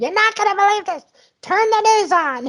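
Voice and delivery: very high-pitched screamed shriek. Retelling a phone call from her, imitating someone screaming. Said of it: "called me on the phone screaming".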